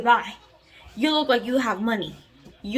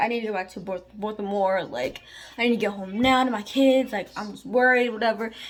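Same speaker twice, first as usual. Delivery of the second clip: pleading, imploring, earnest begging tone. Retelling a stranger's request for help getting home: imitating someone pleading. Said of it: "he's over here pleading like this".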